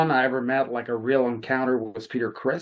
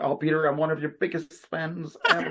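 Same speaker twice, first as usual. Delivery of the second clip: starstruck, gushing fanboy manner; 4 semitones higher than usual. Retelling what they said when meeting a musician: imitating own fanboy gushing. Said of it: "like a fanboy".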